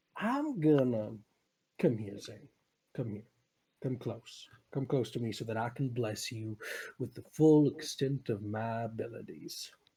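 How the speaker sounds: soft, low-key, put-on cowboy accent. In a roleplay, the speaker calls another player closer in a cowboy accent. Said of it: "I'm keeping with this accent".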